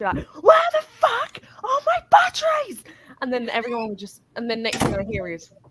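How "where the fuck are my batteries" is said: shrill, very loud, high-pitched full-volume screaming. Retelling shouting in the flat: imitating own shouting. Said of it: "I'll be shouting in my flat".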